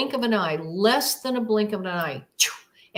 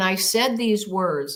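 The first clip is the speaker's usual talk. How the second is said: ordinary talk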